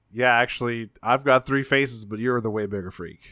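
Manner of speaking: ordinary talk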